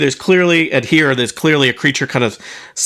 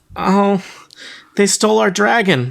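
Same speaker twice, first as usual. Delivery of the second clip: tearful, crying, higher; 6 semitones higher than usual. Voicing Meepo, who answers why he is crying: crying. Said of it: "Why are you crying?".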